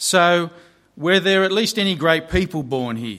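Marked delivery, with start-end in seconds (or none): none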